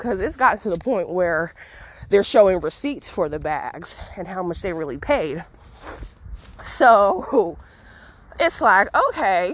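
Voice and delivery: slightly winded, a little out of breath. Speaker talking to viewers while working out, a little out of breath. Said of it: "A little out of breath".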